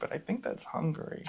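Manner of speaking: hushed voice. Guessing which country a river is in, unsure: whispering. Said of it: "I'm whispering it because".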